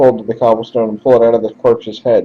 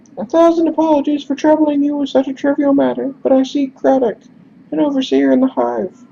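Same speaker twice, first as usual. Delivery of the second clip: very high-pitched put-on character voice. Narrator voicing a messenger asking the player for help, high-pitched voice. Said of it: "we're just going to do high pitched instead".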